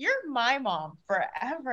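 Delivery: acted sweet, cute tone. A mother retelling what her son said to her, retelling it cutely. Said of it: "it was so cute the way he said it".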